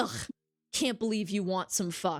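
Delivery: put-on disgusted tone. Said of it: "And then you're like".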